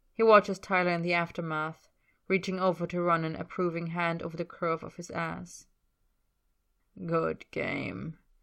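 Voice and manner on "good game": with a little chuckle. Narrator reads a man's remark to another man in the aftermath: chuckling. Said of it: "He chuckles".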